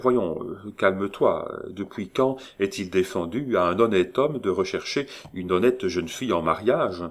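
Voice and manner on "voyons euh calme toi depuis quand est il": usual speaking voice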